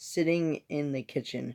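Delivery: ordinary delivery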